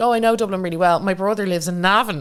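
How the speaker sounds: ordinary delivery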